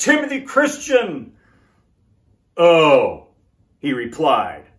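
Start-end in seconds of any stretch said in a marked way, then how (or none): 0.0-1.3 put-on proud tone, pitched very high. Retelling naming their school to a man who asked, retelling a proud answer. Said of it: "we proudly told him".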